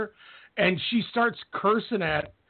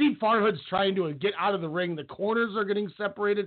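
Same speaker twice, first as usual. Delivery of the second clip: ordinary talk, nothing marked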